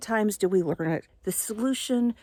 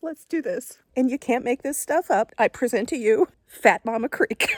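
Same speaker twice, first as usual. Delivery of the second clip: voice catching, choked up, holding back tears; 4 semitones higher, 3 dB louder than usual. Presenting the creek to viewers, trying not to cry. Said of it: "I'm trying not to cry".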